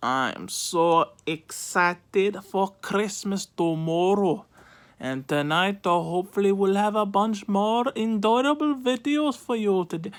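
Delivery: put-on Indian accent. Vlogger greeting viewers on Christmas Eve: Indian accent. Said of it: "I don't know why I'm talking in an Indian accent".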